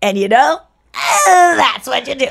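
mannerism with a tacked-on "eh". Showing a mannerism picked up from Chris: imitating Chris's mannerisms. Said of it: "anytime you hear me go".

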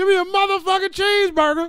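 fake yelling actor voice. Imagining Samuel L. Jackson ordering at a drive-thru: Samuel L. Jackson yelling impression. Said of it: "Sam Jackson just be yelling like".

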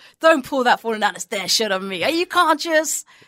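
put-on restrained, mild half-shout. Retelling a film scene where a landlord shouts at a tenant: imitating a landlord shouting. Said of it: "a landlord shouting at a tenant".

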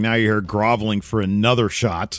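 plain

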